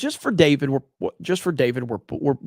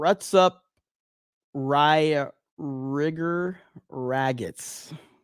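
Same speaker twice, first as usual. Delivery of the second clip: very slow, deliberate, drawn out word by word; 4 dB quieter than usual. Reading a Rumble viewer's comment aloud, very slowly. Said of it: "I had to say that very, very, very slowly".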